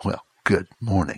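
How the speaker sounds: curt, clipped mock delivery. Speaking to listeners, imitating how someone said good morning: mock-clipped good morning. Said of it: "said it with a clip in their tone of voice".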